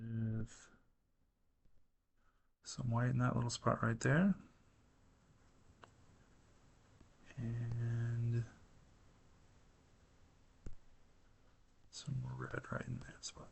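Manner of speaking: hushed half-whisper throughout, with And drawn out. Giving instructions about adding colors, the speaker is half-whispering. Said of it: "Boy, I'm whispering".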